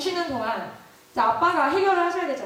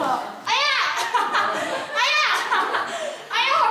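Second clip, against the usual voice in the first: fake, put-on crying on ouch. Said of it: "하고 막 우는 소리 내고".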